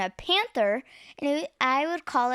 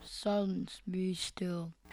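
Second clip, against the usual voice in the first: lowest, deep manly voice, very soft and hushed; 5 semitones lower, 10 dB quieter than usual. A boy, given his line, says it in his deepest, manliest voice. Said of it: "say in your deepest, manliest voice".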